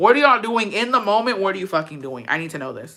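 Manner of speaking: plain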